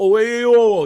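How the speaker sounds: put-on Brooklyn accent. Showing the put-on accent tried for his wife: attempted Brooklyn accent. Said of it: "When I try to talk like I'm from Brooklyn".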